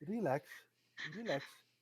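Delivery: giggling, laughing through the words. Playing a character who tries to stand up again, laughing while talking. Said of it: "while still laughing".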